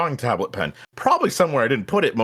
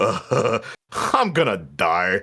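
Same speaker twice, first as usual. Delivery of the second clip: put-on cartoon laughing voice, lower; 4 semitones lower than usual. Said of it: "they always do that laugh".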